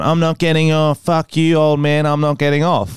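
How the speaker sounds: ordinary talk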